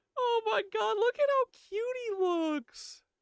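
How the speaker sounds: put-on squeaky, very high, cutesy baby squirrel voice. Showing the audience how cute someone looks, in baby squirrel voice. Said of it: "That's my that's my baby squirrel voice".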